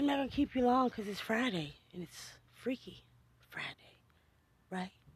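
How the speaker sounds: seductive, sexy voice, played up and put-on. Speaker wrapping up with the group on a Friday, put-on sexy voice. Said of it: "that was my sexy voice".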